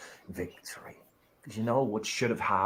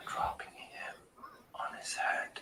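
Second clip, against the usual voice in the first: speaking in a whisper, quieter. Cutting a wrestling promo while another speaker talks over: whispering. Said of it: "why is [name] whispering?".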